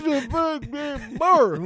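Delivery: unintelligible mock voice. Repeating the impression on request: unintelligible mock impression. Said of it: "I don't even know what you said".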